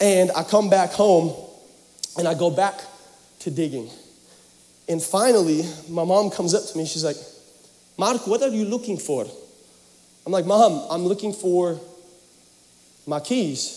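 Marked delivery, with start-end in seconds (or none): 8.0-9.3 put-on Romanian accent, quieter. Retelling his mom finding him digging, the speaker imitates her Romanian accent. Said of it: "she's Romanian, okay? Just bear with me".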